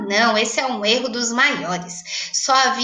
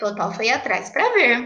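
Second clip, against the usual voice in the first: ordinary delivery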